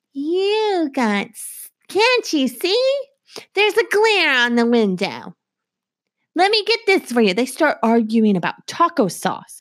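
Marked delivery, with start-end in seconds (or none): 0.2-7.4 put-on high-pitched elderly grandma way of talking. Retelling a car ride, the speaker imitates their grandma's voice. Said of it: "she does talk like this. I am not mimicking her".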